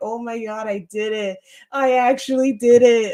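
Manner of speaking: slow, tearful sobbing through the words. Recalling collapsing onto the floor crying, the speaker replays their own words: imitating own past bawling. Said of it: "And I'm just like bawling".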